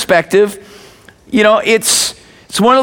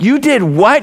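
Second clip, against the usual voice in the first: put-on speech said through a laugh. Parent retelling what they said to their little daughter, acting out laughing. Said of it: "But I'm laughing going".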